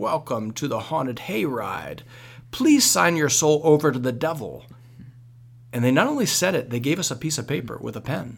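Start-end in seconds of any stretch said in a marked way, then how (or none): 0.0-4.7 eerie, spooky, scary witch voice. Retelling how a person at a haunted hayride tent welcomed them, in a spooky, scary voice. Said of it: "like in a spooky, scary voice".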